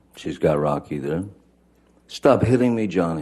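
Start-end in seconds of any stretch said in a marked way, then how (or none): 2.0-3.2 put-on panicked, high-pitched, freaked-out scream. Retelling what was screamed at him: imitating a freaked-out high-pitched scream. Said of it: "she's screaming in, in her best, um, freaked out, upset voice, high-pitched".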